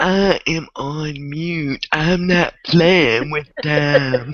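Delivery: slow, drawn-out, deliberate dismissive tone. Retelling what Peachy said when asked to join in: imitating Peachy. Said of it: "Peachy was like".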